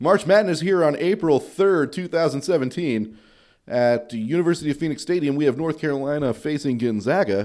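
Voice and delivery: play-by-play sports broadcaster announcer voice. Pretending to call a March Madness game, in a sports broadcaster voice. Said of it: "Did I sound like a broadcaster?".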